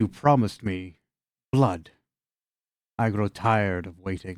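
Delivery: hoarse, raspy wind-spirit voice. The narrator voices a floating wind spirit standing before the listeners, raspy wind spirit voice. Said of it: "asks in a raspy voice".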